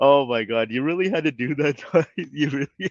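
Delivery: words broken by helpless laughter. Reacting to a guest trolling on the live stream, laughing while talking. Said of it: "I just can't stop laughing".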